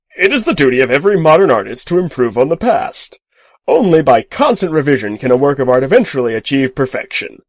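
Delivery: loud, easy, swooping, cheerful enthusiasm. Called an arrogant moron, a man answers the narrator, full of easy enthusiasm. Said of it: "he said, / [name]'s voice was full of easy enthusiasm. / said [name] cheerfully".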